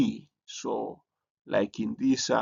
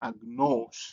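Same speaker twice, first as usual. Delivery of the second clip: circumflex on "agnos", pitch rising then falling. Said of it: "it's like it's going up and going down again".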